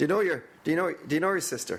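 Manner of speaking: put-on Northern Irish accent. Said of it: "How they say it in Northern Ireland".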